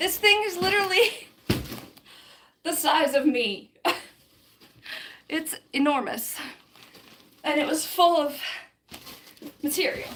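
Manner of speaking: breathless, panting, out of breath between words. Just after carrying something enormous and full of material: out of breath, panting. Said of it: "That's why I'm panting".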